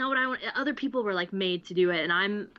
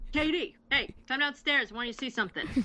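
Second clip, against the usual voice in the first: put-on New York accent, pitched up, calling out; 5 semitones higher than usual. Acting out a dad calling his child to come and see something, in a put-on New York accent. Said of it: "He doesn't talk like a New Yorker".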